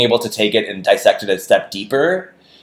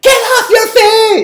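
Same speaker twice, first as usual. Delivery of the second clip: very high, angry shouting; 7 dB louder than usual. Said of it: "just yelling".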